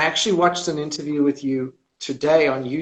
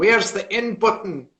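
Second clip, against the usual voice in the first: put-on Scottish accent, pitched higher; 6 semitones higher than usual. Imitating a viewer looking for the in button: Scottish accent. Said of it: "In the Scottish accent".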